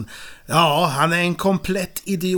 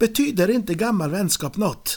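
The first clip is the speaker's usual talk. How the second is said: put-on Finnish accent while speaking Swedish; 3 semitones higher than usual. Quoting a character's reply while retelling a scene, put-on Finnish accent. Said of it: "Bra finsk brytning där".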